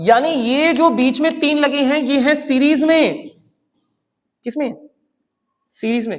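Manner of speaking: full-throated, loud yelling. Explaining a series to listeners hearing him through a mic: shouting. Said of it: "मैं इतना चिल्ला क्यों रहा हूं यार".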